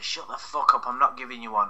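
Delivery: ordinary delivery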